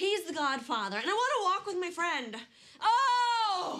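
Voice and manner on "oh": loud, high-pitched yelling. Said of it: "Yelling will only make the baby feel unwanted".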